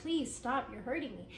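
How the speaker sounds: put-on tearful crying, pleading. Narrating a woman's story, acting out her words as she starts crying: retelling tearful pleading. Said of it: "she starts crying and she's like".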